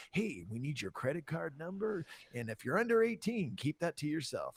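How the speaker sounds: put-on phone-line voice. Recalling calling 976 numbers as a kid, doing a hotline guy impression. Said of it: "there was always a dude like you on there".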